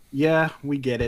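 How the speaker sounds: ordinary delivery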